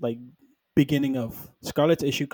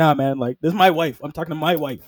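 normal talking voice

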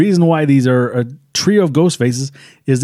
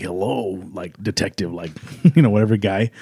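low, soft voice-changer style masked voice. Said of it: "she's doing it in the voice".

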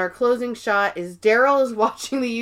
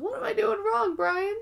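very high, soft, tearful voice, cracking and breaking; 12 semitones higher, 5 dB quieter than usual. Retelling a woman in tears asking Brian off camera: imitating a voice breaking in tears. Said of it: "Her voice is breaking".

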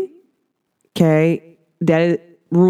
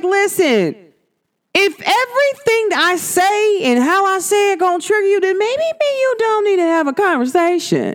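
high-pitched, put-on, firm tone. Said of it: "I'm like".

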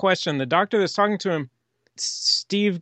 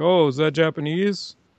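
ironic, sarcastic, jabbing tone. Retelling how a doctor in a film answered: imitating a sarcastic remark.

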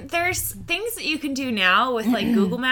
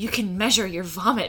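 mock super-excited voice; 4 semitones lower than usual. Telling friends about a gift, the speaker quotes her aunt, imitating her aunt's super excitement. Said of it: "she got super excited".

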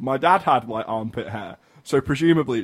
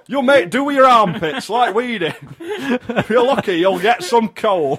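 put-on very high, shrill, loud Northern English mum accent; 11 semitones higher, 6 dB louder than usual. The speaker plays a Northern mum answering a child's Christmas request, Northern English mum voice. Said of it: "No, I'm a Northern mum".

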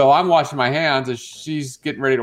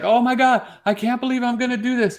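much higher, embarrassed woman's voice. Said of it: "she's like".

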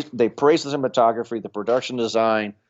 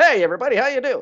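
quick, very high fifties radio announcer voice; 13 semitones higher than usual. Explaining the tone Fincher set, like 1950s radio: 1950s radio announcer voice. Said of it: "that was the tone, like in the 50s, you know, like the radio".

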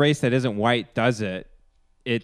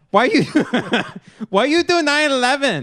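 mocking put-on voice, higher and louder; 13 semitones higher, 5 dB louder than usual. Joining a joke about a flight with a voice bit: Ali Wong impression. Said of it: "That was my impression of Ali Wong".

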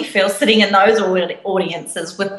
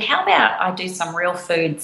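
normal talking voice

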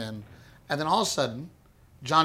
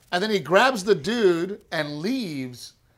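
ordinary delivery

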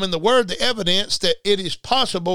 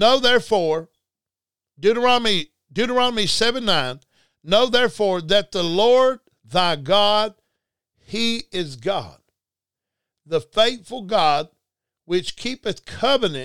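reading very slowly, much slower. A speaker reading deuteronomy 7:9 aloud to listeners, reading very slowly. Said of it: "I'm going to read that real slow".

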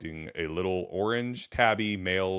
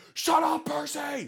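loud high-pitched scream. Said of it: "Screaming my head off".

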